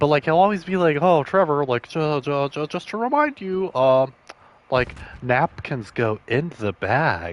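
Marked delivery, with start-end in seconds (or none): 1.0-7.3 slow, super condescending, patronizing, talking-down tone. Imitating how he always reminds Trevor about something, mock-condescending. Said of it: "it's always like super like condescending".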